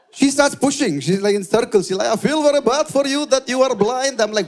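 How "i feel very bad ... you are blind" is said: put-on Russian-accented English, pitched up. Retelling what a woman kept saying to the speaker, in a Russian accent. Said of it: "why do you have a Russian accent?".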